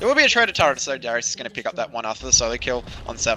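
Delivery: very fast, rattled-off play-by-play commentary. A commentator calling a game before a fight starts: talking very fast. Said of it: "I'm talking very fast".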